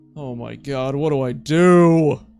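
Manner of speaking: panicked, freaking-out voice. Reacting live during a game, unsure what to do: freaking out. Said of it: "I'm freaking out now".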